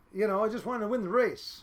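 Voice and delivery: ordinary talk, nothing marked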